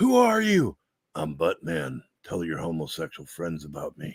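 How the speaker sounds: camp superhero voice with wide, swooping pitch.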